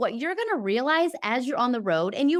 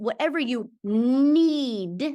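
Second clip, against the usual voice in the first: need stressed, slow and drawn out. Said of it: "emphasis on the need".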